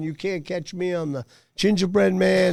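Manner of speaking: scream called out high and light. Telling of being chased around a pool table, the speaker is retelling a scream. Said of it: "and I'm screaming".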